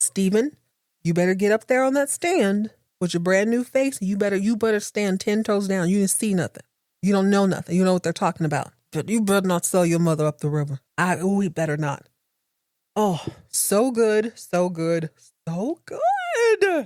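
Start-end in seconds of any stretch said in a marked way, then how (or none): 0.0-10.8 mock firm, stern, no-nonsense scolding tone. Retelling what was said to a character during the episode: retelling a stern talking-to. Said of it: "but giving it a stern talking to".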